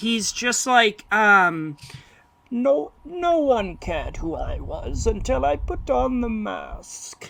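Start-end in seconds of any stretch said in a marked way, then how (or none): 2.5-7.3 slow, drawn-out, menacing, terrifying villain voice. Quoting the villain's opening line from the movie: Bane voice. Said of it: "this voice that is so terrifying".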